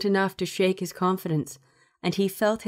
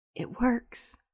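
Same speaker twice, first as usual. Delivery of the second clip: hushed whispered words; 4 semitones higher, 6 dB quieter than usual. Reading him answering Yuko after her hug, whispering. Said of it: "he whispered".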